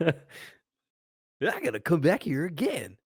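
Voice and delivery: high, slow mocking put-on voice. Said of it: "That was a really good imitation of me".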